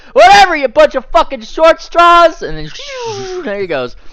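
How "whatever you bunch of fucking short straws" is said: shrill, high, loud taunting yell. Describing someone crossing the river who shouts back as he leaves, retelling a shouted taunt. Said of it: "he kind of shouts like just as he leaves".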